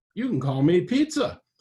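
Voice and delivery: high, buzzing soprano creature voice. Narrator reading a dolphin-like creature's first words, buzzing soprano creature voice. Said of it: "in a buzzing soprano voice".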